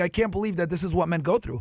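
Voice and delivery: mock crying, tearful put-on voice. Retelling a woman at the end of a video: imitating someone crying. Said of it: "she was fucking crying, like".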